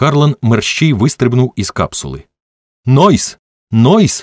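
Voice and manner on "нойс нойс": shouting with all his might. Jumping out of a capsule, a man calls into an empty sector: shouting with all his might. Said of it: "з усієї сили гукав він".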